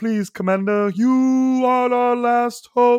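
loud, high, slow, goofy alien voice. Quoting the aliens from a movie pleading with their commander: funny goofy Galaxy Quest alien voice. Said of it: "they just sound so funny and goofy".

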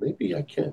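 high, soft, quiet, hopeful inner voice. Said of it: "you just wonder".

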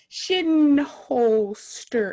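very slow, drawn-out, syllable-by-syllable delivery. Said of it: "I have to say it slowly".

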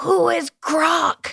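acted, very high, rough, raspy yell. Recounting yelling a question from the crowd, retelling their own yell. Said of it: "I just yelled".

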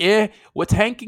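put-on high, botched Canadian accent slipping into full Scouse. Voicing a collapsing ladder giving up, failed Canadian accent sounding Scouse. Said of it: "I was going full Scouse".

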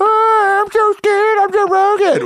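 very high, drawn-out, derisive, scornful voice. Retelling mocking a friend who refused a drug: mocking Joe Rogan impression. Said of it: "We were both doing it".

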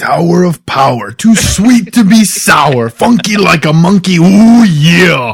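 loud, very slow wrestling promo, every word dragged, "yeah" stretched. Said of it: "tribute to International Talk Like Randy Savage Day".

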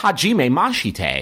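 Japanese spoken with a thick English accent. Speaker shows how some people pronounce Japanese: Japanese with thick English accent. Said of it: "just full thick English accent on the".

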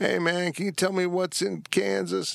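dazed, spaced-out voice. Retelling what a stoned man on his porch asked: imitating a stoned man. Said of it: "stoned out of his brain".

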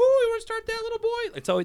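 squeaky, very high put-on falsetto, swooping. Retelling what a guy on the boards said after a push: high-pitched voice. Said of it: "He said it that high-pitched".

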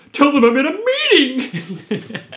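very high, very loud, slow, swooping, drawn out. Reading out a written quote the way he says it: imitating how he says it. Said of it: "in a style to remind me how he says it".

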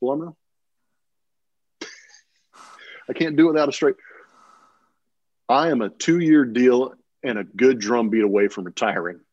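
put-on deadpan, straight-faced delivery. Retelling what he said mid batting practice, as a deadpan line. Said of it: "deadpan, straight face".

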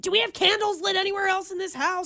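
put-on frustrated, fed-up tone. Retelling what your dad said after the paper towels caught fire, imitating dad's frustrated voice. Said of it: "you could hear the frustration in his voice".

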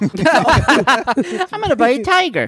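squeaky, very high put-on voice. Riffing on rich people's boredom, the speaker slips into a Mike Tyson voice. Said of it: "Was that your Mike Tyson voice?".

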